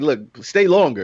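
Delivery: ordinary talk, nothing marked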